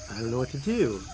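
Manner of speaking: ordinary talk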